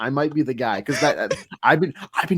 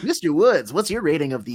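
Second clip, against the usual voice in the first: put-on old-timey radio announcer voice; 4 semitones higher than usual. Host of a trade-rating segment turning to Mister Woods, Rocco Bonello impression. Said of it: "Why are you doing a Rocco Bonello impression".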